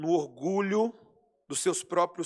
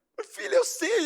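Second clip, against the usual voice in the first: mock crying, tearful dad voice, pitched up; 14 semitones higher than usual. Acting out a father answering his crying daughter, imitating a father crying. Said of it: "Aí você começa a chorar com ela".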